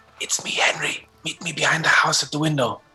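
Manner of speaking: quick, hurried whisper. Playing a character who bumps into someone and passes a secret message: quick whisper. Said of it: "I quickly whisper".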